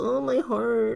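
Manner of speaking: play-acted swooning, very high emotional gushing. Imitating own reaction to a cute family dog: imitating own emotional gushing. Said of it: "Get all, like, emotional".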